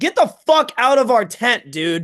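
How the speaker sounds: all-out loud, high screaming. Telling about finding a guy alone in their tent, reenacting screaming at him. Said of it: "Just just screaming at him like".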